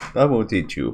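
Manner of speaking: put-on Russian accent, movie-villain style. Voicing an evil figure who refuses to help: Russian accent. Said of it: "I've got a Russian voice for that".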